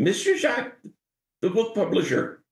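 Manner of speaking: put-on very high-pitched voice with French accent. Act out how the patriarch you met several times addressed you, in his high-pitched french voice. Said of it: "in his high pitched French voice".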